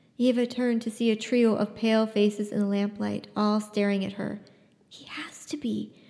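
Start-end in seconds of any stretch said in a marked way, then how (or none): 4.9-5.9 slow, very soft, very quiet, hushed whisper. Yeva answers Lena in the lamplight, whispering. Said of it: "she whispered back".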